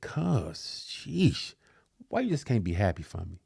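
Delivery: voice full of disgust. Retelling how a cousin answered the speaker: imitating disgusted tone. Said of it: "looked at me as like with such disgust".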